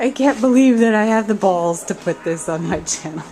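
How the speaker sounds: loud, words broken up by laughter. Signing off a video for channel viewers, laughing while talking. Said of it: "I'm sorry, I'm laughing".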